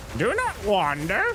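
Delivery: put-on high, slow old lady voice.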